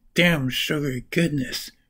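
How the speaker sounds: normal talking voice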